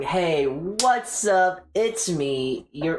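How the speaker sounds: put-on hyper, wired, high-energy excited voice. Showing how it would sound talking like that normally: put-on hyper high-energy voice. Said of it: "Talking at such a high, like I'm coked up".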